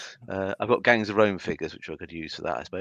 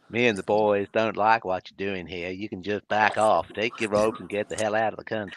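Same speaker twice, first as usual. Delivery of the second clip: terrible, fake, put-on American accent. Speaker plays an american telling robe-wearers to leave, terrible american accent. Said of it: "apologies for my terrible accent".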